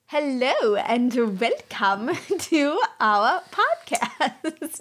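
awkward, slow, drawn-out, stretched delivery.

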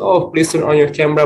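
weary voice, high and fast, repeated.

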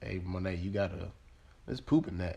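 normal talking voice

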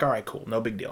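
ordinary delivery

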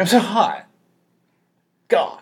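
play-acted, very slow, drawn-out, swooping whine. Imitating how she complains while running in the heat: imitating her complaining about heat. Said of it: "Pretty accurate".

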